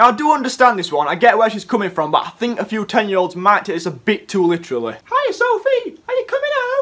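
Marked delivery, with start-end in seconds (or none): 4.9-6.8 put-on squeaky, very high little girl voice. Acting out a ten-year-old taking the advice too literally: girl impression. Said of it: "That's a good girl impression".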